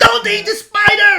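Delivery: very high, very loud, alarmed top-of-the-lungs shriek. Acting out a caregiver warning a toddler: imitating a high alarmed shriek. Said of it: "shrieks at the top of their voice in a high alarming sound wave".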